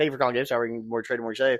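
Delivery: very fast, rushed, rapid-fire rattled-off delivery. Recalling a phone greeting said over and over, very fast. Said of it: "I said it so fast".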